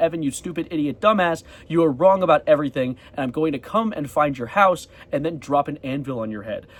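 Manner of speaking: ordinary talk, nothing marked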